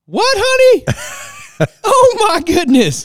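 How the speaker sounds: put-on loud laughing speech. Retelling a woman's reaction among passengers, imitating loud laughing speech. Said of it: "Loud, laughing at me".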